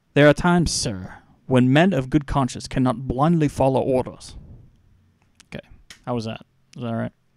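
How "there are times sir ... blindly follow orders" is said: bad, horrible put-on English accent. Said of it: "I'm horrible with English accents".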